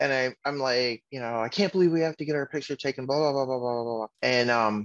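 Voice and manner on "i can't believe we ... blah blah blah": fast, whiny complaining. Retelling riding the escalator to the portrait studio, imitating his own whining. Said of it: "Whining about it isn't going to help".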